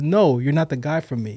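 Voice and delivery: plain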